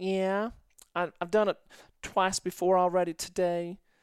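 cute easy Southern drawl. Retelling a chat with a woman, voice her reply in a cute southern drawl. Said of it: "really cute southern drawl".

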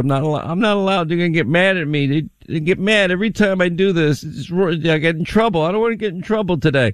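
fumbling, high, evasive speech. Imitating a president dodging reporters' questions: Joe Biden impression. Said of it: "Joe Biden is, never wants to answer".

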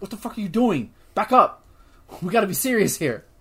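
play-acted, sharp, bossy, angry, snapping tone. Retelling how the alpha head scolds another head: imitating a monster head snapping. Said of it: "snaps at him".

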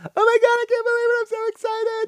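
over-the-top fake gushing excitement, very high pitch. Mocking an announcer's excitement: mocking fake excitement. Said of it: "that is so fake".

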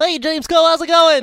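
very high, loud AM radio shock jock voice. On a podcast, after praising someone's voice, a host greets a guest: am radio shock jock voice. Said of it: "I love your AM radio shock jock voice".

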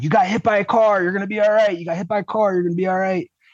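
mock teen kid voice, high-pitched shouting. Retelling a kid behind him at the crash: imitating a kid yelling. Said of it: "was yelling".

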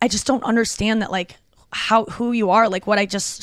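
ordinary talk

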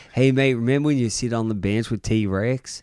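put-on American accent. Retelling what dad always said: imitating dad's American accent. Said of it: "'cause he's got an American accent".

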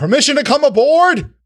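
loud booming yell. A game master voices someone calling from the dock, a loud booming yell. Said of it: "a loud, booming voice yelling".

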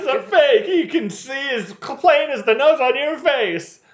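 acted screaming. Retelling how a woman screamed backstage, retelling a scream. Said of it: "But she's screaming".

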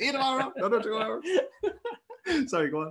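mocking, laughing delivery.

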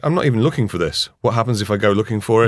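ordinary talk

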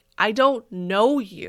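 very loud, slow, deliberate, hostile aggressive delivery. Retelling a reply heard in a grocery store: imitating Flennard saying it aggressively.

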